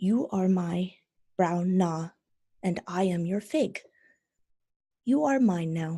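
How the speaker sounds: soft, hushed half-whisper, no voice behind it. Narrating a story where a man holds up a newly formed rat, half-whispering. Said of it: "he kind of whispers".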